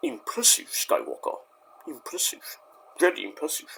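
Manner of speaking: breathy, whispered movie-villain voice, all breath. Quoting a villain's line: Emperor Palpatine voice. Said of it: "you have Emperor Palpatine go".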